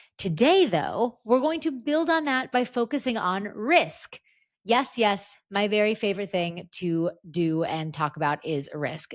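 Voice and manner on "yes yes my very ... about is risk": ordinary delivery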